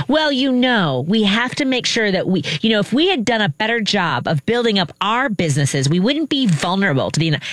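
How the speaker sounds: self-satisfied commentator tone. Imitating a conservative commentator on Canadian broadcasting: smug conservative commentator impression. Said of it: "that's my impression of the conservative commentator".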